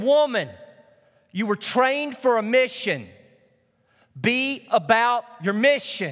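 slow, deliberate, drawn-out crying out. Retelling how he cried out to the woman tending the wounded, retelling his cry out. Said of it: "he would cry out again".

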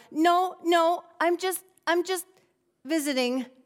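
stammered out. A girl taken for the Johnsons' granddaughter answers everyone, stammering. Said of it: "she stammered out".

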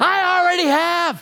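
put-on, very high yelling. Speaker quotes a woman yelling back after being told to call 911: retelling a yell. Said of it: "And she yells".

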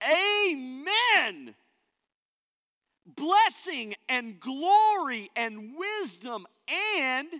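mighty booming, high, thunderous, very loud, very slow. Reading Revelation aloud to listeners, acting out John in a loud thunderous voice. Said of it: "with a mighty loud, thunderous voice. I'll try to do it for you".

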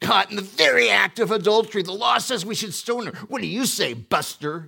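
sneering, insincere mocking tone, very high and loud. Retelling the accusers questioning Jesus about the woman, put-on mocking, insincere tone. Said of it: "Do you think I missed their attitude there?".

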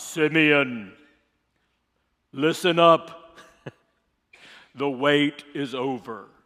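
deep, loud, booming delivery. Speaker imagines the Spirit of God talking to Simeon, in a deep voice of God. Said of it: "that deep voice of God".

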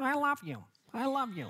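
eerie pull-string doll voice, very high. Describing a pull-string doll to the audience, the speaker does a creepy Chatty Cathy voice. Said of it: "It's like very creepy voice".

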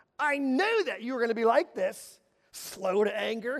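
mock disdainful tone. Speaker voicing Jonah's complaint to God: mock disdain. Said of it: "you can hear the disdain in his voice".

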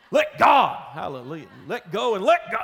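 loud preacher-style proclamation with sermon cadence. Speaker reading a bible verse aloud, saying it like a preacher. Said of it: "I just feel like saying it like a preacher sometimes".

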